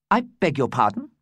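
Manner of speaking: forced calm, striving to keep composure. [name] replies when Zarella points at him and demands an answer, trying to stay calm. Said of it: "trying to stay calm".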